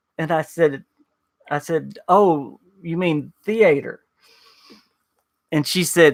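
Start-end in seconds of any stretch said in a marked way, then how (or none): 2.1-4.0 extremely thick put-on Southern accent. Retelling asking a woman about someone in theater, the speaker repeats the word in a very thick southern accent. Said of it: "the most Southern accent I've ever heard".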